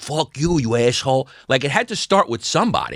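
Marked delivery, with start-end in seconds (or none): 0.0-1.3 put-on American accent with Italian flavor. Imagining who started a regional accent: imitating a charismatic Italian guy. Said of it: "charismatic Italian guy going like".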